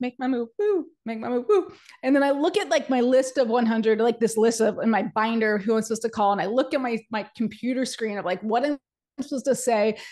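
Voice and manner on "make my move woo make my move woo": put-on hyped, super excited cheering tone. Reaching the desk in the calling bullpen, the speaker retells past super excitement. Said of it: "I'm like super excited".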